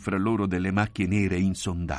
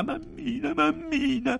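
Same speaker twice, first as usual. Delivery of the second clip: very high, frightened, terrified crying out. She calls for her mother as the narrator walks on: terrified crying out. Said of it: "era terrorizzata e gridava".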